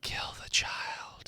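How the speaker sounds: quiet, sinister whispering. Voicing a whisper in a player's head: whispering voice in the head. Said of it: "You have a whisper in your head that says".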